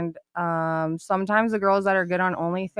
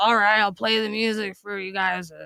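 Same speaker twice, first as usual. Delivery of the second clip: put-on rude, obnoxious dj voice. Retelling what a rude dj said to the guests: imitating the rude dj. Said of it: "you just did an impersonation of me".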